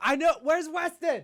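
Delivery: play-acted, very high, drawn-out calling-out shout. Acting out what she said she would do at the exit: imitating someone yelling. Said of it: "just yell".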